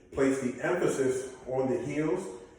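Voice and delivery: ordinary talk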